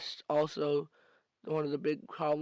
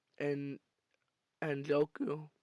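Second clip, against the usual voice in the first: voice breaking and cracking mid-word; 3 dB quieter than usual. Talking about a team's draft picks when the voice cracks, voice cracking. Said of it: "my voice cracked".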